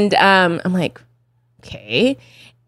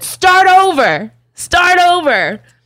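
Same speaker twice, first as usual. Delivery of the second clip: put-on loud scream, higher; 9 semitones higher, 3 dB louder than usual. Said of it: "he screams at the top of the lu-, his lungs".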